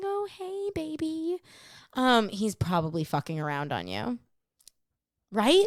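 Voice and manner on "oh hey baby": put-on, very high, soft, sweet-talking voice. Describing how a cheating man talks to a woman, imitating a man's girlfriend voice. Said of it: "talking to you like this and going".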